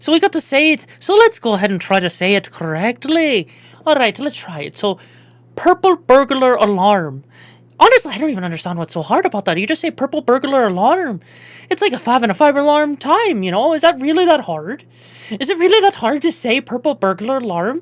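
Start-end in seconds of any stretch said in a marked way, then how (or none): 4.8-17.8 a wee bit Irish accent, maybe Scottish. Trying to say the tongue twister correctly, go a little bit Irish. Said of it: "go a little bit Irish, maybe a wee bit Scottish".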